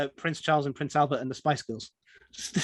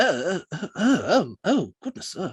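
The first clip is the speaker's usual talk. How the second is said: flustered string of "oh"s, blurted out; 3 semitones higher than usual. Retelling Prince Charles learning the joke's meaning: imitating flustered Prince Charles. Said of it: "And Prince Charles was just".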